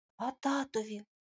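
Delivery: in a whisper. Tymko, now fully intrigued, asks Milana a question, whispered. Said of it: "пошепки спитав Тимко".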